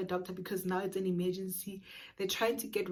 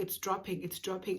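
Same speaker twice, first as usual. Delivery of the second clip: put-on alarmed, urgent, panicked nurse voice, repeating. Retelling a hospital emergency, imitating a panicking nurse. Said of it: "also panicking because she's like".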